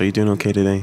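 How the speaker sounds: silky smooth, really nice customer-service voice. Showing the customer service voice they all use working retail, silky smooth customer service voice. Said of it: "silky smooth customer service voice".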